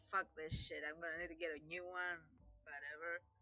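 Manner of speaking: low, angry, annoyed under-the-breath grumbling mumble. Playing a character who finds someone tried the keypad: mumbling angrily under breath. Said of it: "I'm kinda mumbling under my breath".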